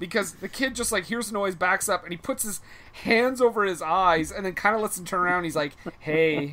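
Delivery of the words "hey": mock creepy tone, lower pitch. Retelling how a movie character greets a kid: imitating a creepy greeting. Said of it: "he greets him in the creepiest way ever".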